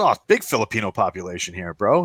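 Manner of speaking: normal talking voice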